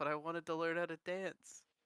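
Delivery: put-on quiet under-breath murmur. Retelling what a player shapeshifted into a harpy said, retelling a quiet under-breath mutter. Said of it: "quietly under his breath be like".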